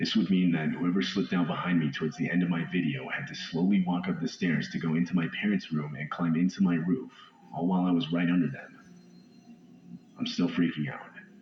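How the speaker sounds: normal talking voice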